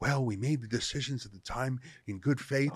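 put-on sexiest voice. Mocking how Trudeau will answer the inquiry: mock sexiest Trudeau voice. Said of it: "Trudeau will just put on his sexiest voice".

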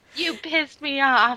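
put-on cute, tiny, squeaky small child voice. Retelling what he said back to her, imitating a squeaky little voice. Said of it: "he's got that cute little squeaky voice".

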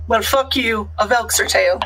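ordinary talk

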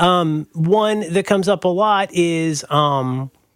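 ordinary talk

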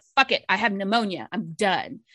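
normal talking voice

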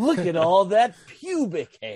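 salacious, relishing tone. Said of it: "as salacious as that movie when he said".

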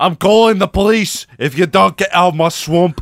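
put-on Scottish accent, loud, high. Quoting what Shrek says about the swamp: Scottish Shrek voice.

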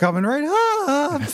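very high voice, cracking as it comes out. Retelling how he delivered his line, the speaker imitates his voice cracking. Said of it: "his voice cracks".

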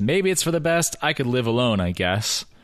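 usual speaking voice

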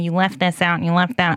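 ordinary talk

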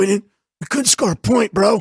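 put-on voice catching, all choked up. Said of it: "He was, like, choked up".

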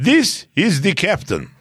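high, swooping put-on Russian accent. Asked to read it aloud for the group, reading in a russian accent. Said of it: "Sounds Russian".

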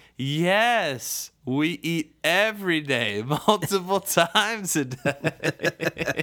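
mock very loud, high-pitched announcement-style voice. Retelling an embarrassed mom answering her son so other moms hear, very loud voice. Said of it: "in a very loud voice".

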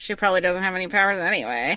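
low, quick mumble under the breath. Retelling what Rochelle said about Sarah, Rochelle mumbling under her breath. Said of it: "Rochelle mumble under her breath".

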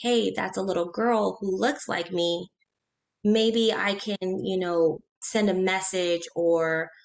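ordinary delivery

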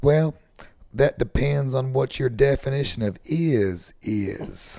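badly put-on Southern politician voice. Retelling a deposition answer that was given on camera: terrible Bill Clinton impression. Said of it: "You do a terrible Bill Clinton impersonation".

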